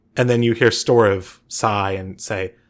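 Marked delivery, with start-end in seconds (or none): none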